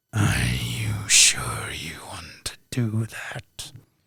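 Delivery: breathy, growling whisper. A storyteller voices the warning heard as the listener's hand touches the knob, growling. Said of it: "you hear in a growling voice".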